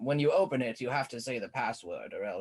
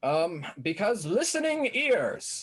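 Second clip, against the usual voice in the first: very loud, high-pitched, room-filling declaration; 8 semitones higher, 6 dB louder than usual. Character answering someone demanding an explanation at gunpoint; said very loudly. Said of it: "he just says that very loudly".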